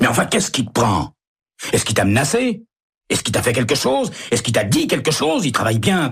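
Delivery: abrupt angry outburst, high pitch. Narrator reads Emery's reply to Stella, suddenly angry. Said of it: "Le placide Emery se met brusquement en colère".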